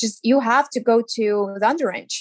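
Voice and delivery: ordinary talk, nothing marked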